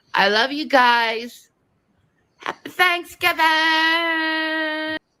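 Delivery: high babyish put-on voice, guys stretched out. Signing off with Thanksgiving wishes to the audience, baby voice. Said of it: "why is she making the baby voices?".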